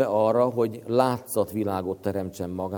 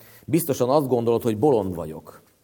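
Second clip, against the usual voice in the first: ordinary talk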